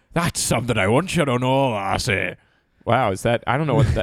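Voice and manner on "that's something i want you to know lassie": put-on pirate voice with a slight Irish accent. Repeating back a line Daniel said, imitating Daniel, a little Irish like a pirate. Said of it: "That was like pirate".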